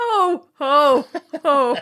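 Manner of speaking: big loud belted-out jolly ho-ho-ho laugh. Joking after being told the mourning sounds like Santa Claus: Santa Claus voice. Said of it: "You sound like Santa Claus".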